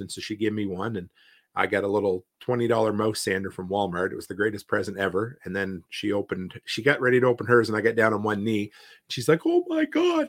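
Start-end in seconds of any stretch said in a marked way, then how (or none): 9.4-10.3 play-acted thrilled squeal, very high-pitched, all excited. Retelling his wife's reaction as he knelt on one knee; imitating someone all excited. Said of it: "And she was all excited".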